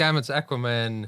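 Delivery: ordinary delivery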